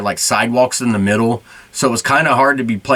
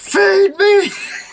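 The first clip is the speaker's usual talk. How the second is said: very high put-on shrill top-of-the-lungs scream. Retelling a game where a teammate wasn't seeing them, retelling a top-of-lungs scream. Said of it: "I just screamed at the top of my lungs".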